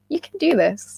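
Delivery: high, bright, encouraging, reassuring voice.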